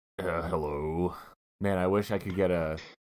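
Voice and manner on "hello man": growly put-on voice, lower, quieter. Unable to do the impression he wanted, the speaker tries anyway: Growly Puzzle Maker voice. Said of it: "That's just Growly Puzzle Maker".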